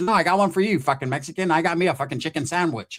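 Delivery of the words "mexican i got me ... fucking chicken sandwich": normal talking voice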